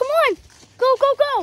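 high, loud, frantic panicked voice.

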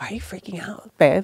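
mock hushed voice. Retelling what he said to her during their fights, imitating him talking quieter. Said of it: "he would start talking quieter and quieter".

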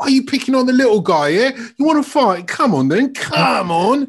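indignant, outraged, shrill, very high-pitched voice. Retelling a captain wading in after a foul: imitating Bobby Moore's outrage. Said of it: "English sense of outrage at the injustice".

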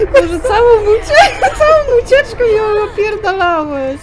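loud, high rant through laughter.

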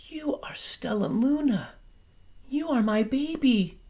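soft whisper, pitched very high. Mother Bat speaks to Stella Luna, whispering. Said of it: "She whispered".

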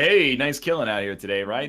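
put-on friendly voice. Imagining a friend trying to befriend the killer: imitating Rob being friendly. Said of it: "He'd be like".

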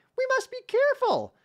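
very high-pitched, uneasy and nervous. A winged companion warns as the sun sets; nervous. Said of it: "she said, nervously".

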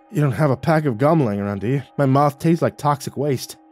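ordinary delivery

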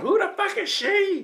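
play-acted very high, stretched, drawn-out shriek. Retelling what the wife said at a family dinner: imitating wife screaming. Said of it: "My wife started screaming".

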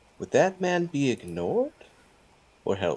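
hushed. Leaning in toward Lord Versheiner, a player's character asks a question: quiet. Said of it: "I kind of lean in, like, quietly".

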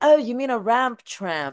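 high, put-on London British accent. Retelling what a guy in London said: imitating a British accent. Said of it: "It's better in that accent".

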